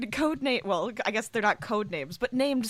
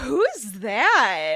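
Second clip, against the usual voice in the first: put-on Valley Girl voice, louder; 6 dB louder than usual. Guessing how Clover would react: imitating Clover's voice. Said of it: "I did her voice really well just then".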